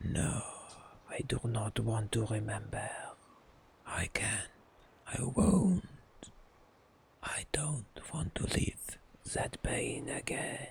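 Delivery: hoarse, raspy whisper. A voice from the chained spirit answers the player's question; hoarse Nahindri voice. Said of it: "It's impossible to tell that [name]'s essence lurks within. / The metal of the chain seems to darken. A minute passes before you hear a hoarse voice. I am [name]. / It's impossible to tell that [name]".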